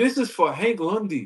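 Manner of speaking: put-on English accent, slow and deliberate. Quoting someone's line about Hank Lundy, in a British accent. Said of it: "That was a British accent".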